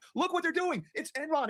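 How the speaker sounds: play-acted, high-pitched screaming at the top of the lungs. Retelling what was said on the channel months ago: imitating own past screaming. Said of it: "screaming from the top of my lungs".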